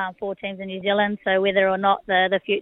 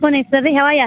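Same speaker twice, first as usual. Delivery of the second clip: loud, excited voice, pitched high. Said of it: "love the excitement in your voice".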